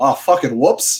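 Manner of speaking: put-on movie villain accent. Quoting a movie line after being asked: Kano accent. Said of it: "You have to do it in your best Kano accent".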